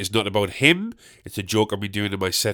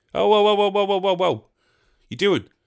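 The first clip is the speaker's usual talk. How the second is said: put-on outgoing voice, higher, much slower; 10 semitones higher than usual. Speaker acts out how a more extroverted person would react: imitating an extroverted person. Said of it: "That's my impression of somebody who's a bit more extroverted".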